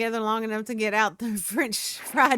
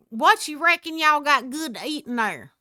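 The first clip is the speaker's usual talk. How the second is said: put-on high-pitched elderly man's voice; 5 semitones higher, 4 dB louder than usual. Retelling ordering at a drive-through speaker, imitating Gray's old-man voice. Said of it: "made this voice that made him sound like he was probably eighty".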